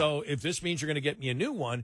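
ordinary delivery

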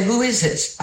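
put-on New York Bronx accent. Retelling answering a restricted call on the phone: New York tone. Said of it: "I went so New York in my tone".

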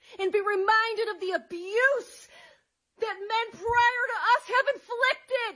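crying, tearful breakdown.

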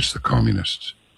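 quiet, hushed tone. Retelling an older greek man's answer: imitating a hushed tone. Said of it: "in kind of a hushed tone".

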